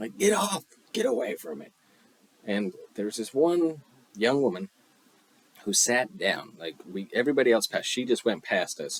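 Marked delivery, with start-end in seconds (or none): 0.2-1.7 acted very high, loud screaming. Retelling how a forest ranger warned people near a bison: imitating a ranger screaming. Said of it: "he was screaming at people".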